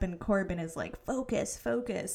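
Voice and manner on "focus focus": normal talking voice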